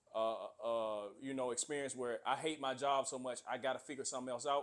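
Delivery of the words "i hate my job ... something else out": plain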